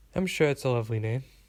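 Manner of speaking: ordinary delivery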